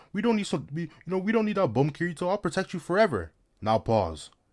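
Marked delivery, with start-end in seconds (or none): 0.1-3.3 high, mushy, simpering voice. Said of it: "talking about some".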